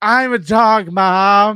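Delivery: put-on very loud drunken yell. Retelling how a drunk woman yelled at a comic mid-bit, imitating a drunk woman yelling. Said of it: "this woman starts yelling at him".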